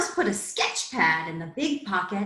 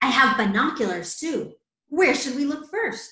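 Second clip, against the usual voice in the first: usual speaking voice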